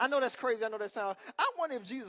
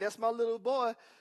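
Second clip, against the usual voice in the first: fond, proud, doting mother voice; 3 dB louder than usual. Retelling how a mother speaks about her son: imitating a doting mother. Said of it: "'Cause the mama's like".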